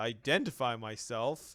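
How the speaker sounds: puzzled, questioning tone. Voicing a character questioned by a robot: quizzical NPC reply. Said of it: "he looks at you quizzically".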